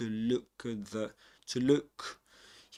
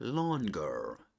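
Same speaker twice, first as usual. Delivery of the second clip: longer said in American English pronunciation; 3 semitones lower than usual. Showing how a word sounds in American English: American English pronunciation. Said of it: "American English".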